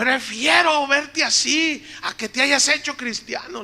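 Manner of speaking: high, loud, angry woman's voice.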